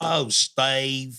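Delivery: put-on old southern lady's mild exclamation. Reading a listener's joke email aloud: imitating an old southern lady yelling. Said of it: "you hear an old Southern lady yell".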